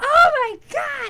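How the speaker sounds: very high, very loud, shrill outburst. Retelling watching the scene: imitating own past yell. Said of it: "I yelled".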